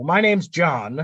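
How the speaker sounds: glum, dejected, half-sincere, half-sarcastic delivery. Retelling Madden's postgame reply to a reporter, imitating a dejected John Madden. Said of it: "he's like so dejected and he's kind of being sarcastic".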